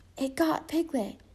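high, half-whispered under the breath. Pooh, under the bed, speaks after Piglet's voice answers from outside: half-whispered. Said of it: "Pooh whispered".

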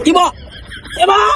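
startled shout.

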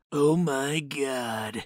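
rough gravelly voice. Realizing he's being flipped off after a Mario thank-you line; gravelly voice. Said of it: "(gravelly voice)".

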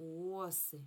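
оси with stress on first syllable, О. Teaching Ukrainian plural word stress, saying оси with stress on О. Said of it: "коли множина, наголос падає на О".

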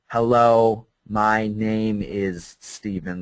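very slow, word-by-word, drawn-out condescending delivery. Demonstrating how speaking too slow comes out, very slow speech. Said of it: "you should speak slow. And it comes out like".

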